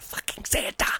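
soft frightened whisper.

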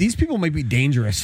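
plain

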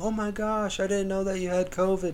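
play-acted, high, tearful crying voice. Retelling late-night calls from grandparents who heard COVID rumors, imitating them crying. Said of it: "just crying".

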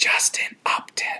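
playful, hush-hush stage whisper. Naming a player without wanting him to hear: playful whisper. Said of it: "so maybe I should whisper".

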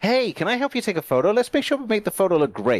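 fake American accent, laid on. Quoting a French woman who offered to help take a photo, fake American accent. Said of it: "I'm just giving her an American accent".

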